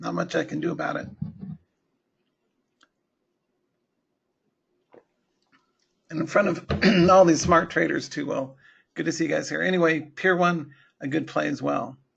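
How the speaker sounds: voice dropping and cutting out. Trading show host with a voice worn from broadcasting, voice dropping out. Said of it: "Little voice is dropping out".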